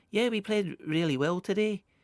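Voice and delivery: gentle, light Edinburgh accent, very high pitch. Speaker attempts to imitate how he speaks, soft Edinburgh accent. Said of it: "soft kind of Edinburgh accent".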